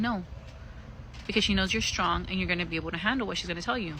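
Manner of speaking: plain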